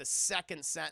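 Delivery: plain reading voice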